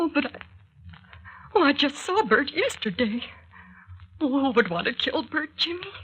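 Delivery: tearful voice. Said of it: "don't cry, [name]".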